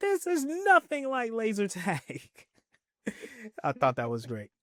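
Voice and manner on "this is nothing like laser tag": very high-pitched screaming cry. Recounting a story, imitating Sam screaming. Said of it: "Sam is screaming like".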